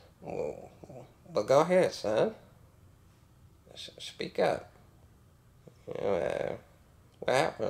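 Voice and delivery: snake-like, drawn-out southern drawl. Quoting a film scene just praised: imitating Robert's snake-like southern drawl. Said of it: "early fifties fucking southern drawl".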